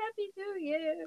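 very high, hushed half-whisper to oneself. Retelling waiting quietly in the bedroom for midnight: imitating own half-whisper. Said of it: "I just whisper to myself".

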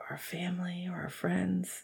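quiet, soft, slow, menacing, dropping to a whisper.

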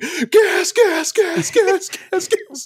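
play-acted very high, very slow, drawn-out screaming. Retelling a near-crash in the car, acting out screaming at the driver. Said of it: "her husband and I were screaming".

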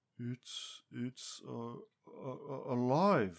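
stammering, halting stutter. Sylvanus finally manages to say what he is experiencing, stuttering. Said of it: "Sylvanus stuttered".

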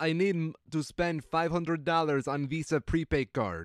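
thick, heavy, put-on Russian accent. Retelling what a woman who came in said, thick Russian accent. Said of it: "with this very thick Russian accent".

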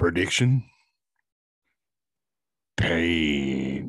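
low voice with the word pain drawn out. Showing a friend the impersonation you have been working on lately, a Clubber Lang impression. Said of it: "That's my impersonation I'm working on lately".

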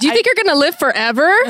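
upset, heated, blurted outburst. Told someone made people wait three months, a speaker questions them: yelling. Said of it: "Why are you yelling?".

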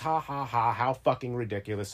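ordinary talk

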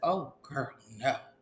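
ordinary delivery

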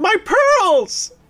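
screeching, screaming woman's voice, pitched very high. Acting out a scene with a woman screaming in the background. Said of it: "a woman screaming in the background".

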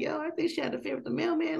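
gossiping tone, high and fast.

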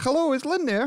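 very high, pitched-way-up voice. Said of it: "That's genuinely what she sounded like".

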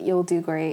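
usual speaking voice

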